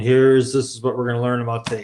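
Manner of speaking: droning, flat presenter-like monotone, rattled off. Insisting the upcoming speaker is not dull, demonstrating the opposite: monotone presenter. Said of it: "a presenter who is like this monotone".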